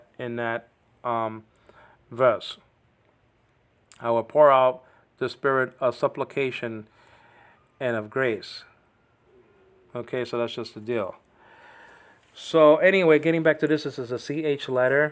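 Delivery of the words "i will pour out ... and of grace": ordinary delivery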